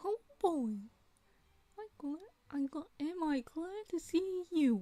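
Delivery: loud, slow, high squeaky voice. Though lacking helium, the speaker attempts a high Mickey Mouse voice. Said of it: "I don't think I'm going to be able to do this voice because I don't have helium".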